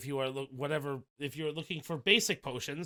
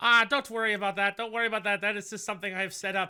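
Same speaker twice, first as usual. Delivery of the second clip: put-on small elderly man voice, louder; 7 semitones higher, 7 dB louder than usual. Narrating a store scene, voicing the man in the store in a small elderly man voice. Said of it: "a small elderly man like".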